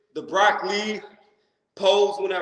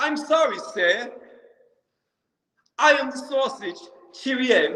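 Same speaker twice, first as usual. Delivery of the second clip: pitched-up, not-very-good put-on British accent; 5 semitones higher than usual. Talking to a stream chat, saying a line in a not-very-good british accent. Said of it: "That's my best um, British accent".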